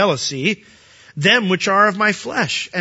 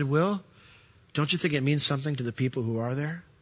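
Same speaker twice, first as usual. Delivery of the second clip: sweet, soft, tender, loving, gentle rebuke; 4 semitones lower, 9 dB quieter than usual. Recalling what Beverly told the speaker when few people showed up; imitating Beverly's gentle rebuke. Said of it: "in that lovingly, gentle, rebuking, sweet voice of hers".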